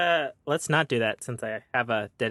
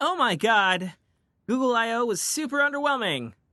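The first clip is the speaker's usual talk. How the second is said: loud, thrilled, excited outburst in a very high voice; 11 semitones higher than usual. Testing the microphone and showing different voices, loud, excited voice. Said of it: "this is my loud, excited voice".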